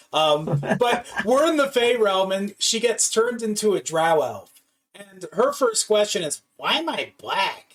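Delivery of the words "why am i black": put-on raspy smoker's voice with a slight lisp. Quoting a smoker character just turned into a drow elf: raspy voice with a lisp. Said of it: "that that raspy voice".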